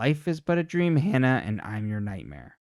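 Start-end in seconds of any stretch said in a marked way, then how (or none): none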